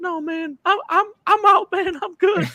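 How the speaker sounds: very high voice, slow, words dragged out. Retelling a halftime retirement story: high-pitched Vontae Davis voice. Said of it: "So [name] does an impersonation of him".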